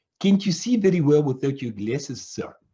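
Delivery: put-on woman's voice in a South African accent. Retelling what the young lady opposite asked, in a south african accent. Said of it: "she said in her South African accent".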